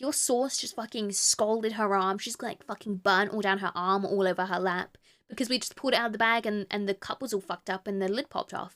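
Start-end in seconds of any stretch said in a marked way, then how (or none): none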